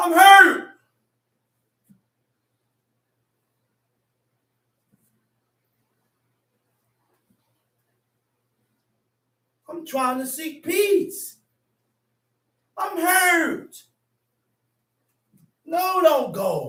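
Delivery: earnest, slow, hard begging tone. Acting out a husband begging his wife not to leave: acted husband pleading. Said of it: "begging and begging and pleading and pleading".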